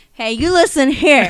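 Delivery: put-on slurred drunken voice. Retelling confronting girls at a party: imitating her drunk self. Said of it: "I'm all drunk".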